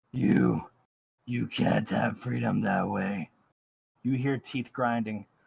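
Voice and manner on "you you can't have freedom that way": low, deep-voiced creature voice. A storyteller voicing a speaker in the scene, deep voice. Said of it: "A deep voice says".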